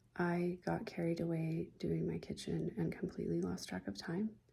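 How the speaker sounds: hushed, really quiet voice. Confessional time with viewers, about to tell them a secret: talking really quiet. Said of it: "I'm talking really quiet".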